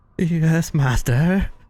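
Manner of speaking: trembling fearful voice. Handed over by their master, Dorth answers in a trembling, scared voice. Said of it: "They have a, a trembling, scared voice".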